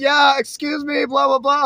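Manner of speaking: proper polite voice. Retelling how the speaker answered the phone after getting in trouble: putting on a proper voice. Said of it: "I try to sound all proper".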